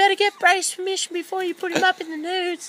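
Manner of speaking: put-on mother voice, very high-pitched. Quoting what Sue told them last week: Sue impression. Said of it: "really good impression of my mum".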